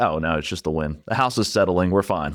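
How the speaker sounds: ordinary talk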